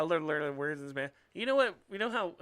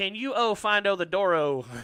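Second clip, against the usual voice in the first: very loud, slow fake Spanish with o endings; 4 semitones higher, 9 dB louder than usual. Imitating customers who add O to the end of everything: imitating mock Spanish with O endings.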